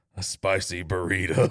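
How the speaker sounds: strong, deep, put-on Southern accent. Retelling taking an order, quoting a woman ordering food, in a deep Southern accent. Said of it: "in a deep Southern accent that did not exist five seconds later".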